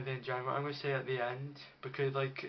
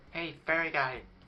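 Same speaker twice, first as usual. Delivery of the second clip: put-on fire imp creature voice; 2 semitones higher, 4 dB louder than usual. Voicing what the fire imps say when they see you: fire imp voice. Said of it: "I'll try to do the voice of them".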